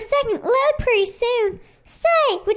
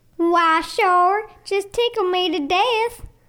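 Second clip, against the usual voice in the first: put-on deep Southern American accent; 5 semitones lower than usual. A brownie at the North Pole answers a visitor's question in a southern accent. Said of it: "What are you doing at the North Pole with a southern accent?".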